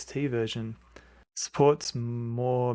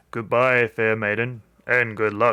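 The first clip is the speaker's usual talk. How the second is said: lower pitched voice, projected loudly; 6 dB louder than usual. Reading the story, the narrator voices Mad Dog speaking to the maiden: Mad Dog's lower than normal voice. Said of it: "Speaking in a lower than normal voice".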